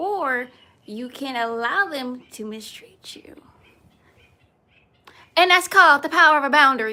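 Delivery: very loud, booming, fired-up voice. Speaking to listeners to encourage and inspire them, talking loud. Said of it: "I'm talking so loud".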